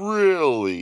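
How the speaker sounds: skeptical, doubtful, disbelieving. Told that their friend passed out while his wife is in labor, Dr. Freeman asks, skeptical. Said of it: "said Dr. Freeman skeptically".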